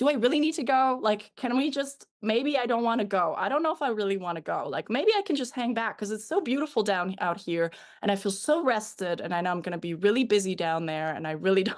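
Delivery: play-acted coaxing, pleading, bargaining ramble. Retelling bargaining with him about having to go: imitating own bargaining plea. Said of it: "I started bargaining with him".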